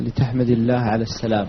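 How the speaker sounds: ordinary delivery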